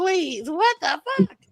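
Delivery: shrill scream at very high pitch. Retelling own reaction before an interrogation: retelling own screaming. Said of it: "like, screaming".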